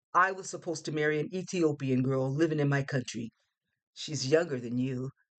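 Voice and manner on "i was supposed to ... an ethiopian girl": usual speaking voice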